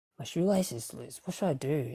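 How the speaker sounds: normal talking voice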